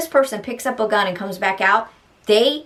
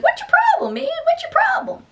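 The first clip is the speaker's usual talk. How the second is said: very high, comical little voice. Quoting the man the way he always used to speak, in a really funny little voice. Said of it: "He always used this like really funny little voice".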